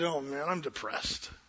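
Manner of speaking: low, soft mutter under the breath. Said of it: "muttered under my vo-, just kinda under my breath".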